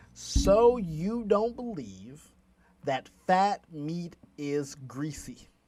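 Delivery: slow, deliberate, carefully spelled-out letters. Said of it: "let me say it slow".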